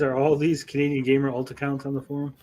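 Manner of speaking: usual speaking voice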